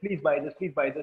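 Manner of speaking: ordinary delivery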